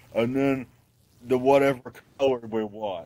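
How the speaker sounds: mock dim-witted voice. Describing a card deck to the others in a Danny Whitmer voice. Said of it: "Is that your Danny Whitmer voice?".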